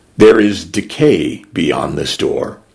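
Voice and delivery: ordinary talk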